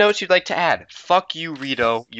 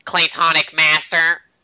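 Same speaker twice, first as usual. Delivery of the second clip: very nasal voice, higher pitch; 3 semitones higher than usual. Showing listeners how to greet each other: really nasal voice. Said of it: "say with a really nasal voice".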